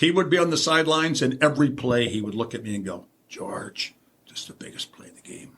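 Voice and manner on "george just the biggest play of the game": gentle, very quiet, breathy near-whisper. Retelling what was said on the sidelines every play: soft Super Dave Osborne voice. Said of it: "and that soft voice that he had".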